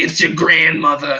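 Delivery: put-on raspy old woman smoker's voice. Knocking on a door while pretending to be grandma, doing a put-on old woman smoker voice. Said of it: "I did like the smoker voice, old woman thing".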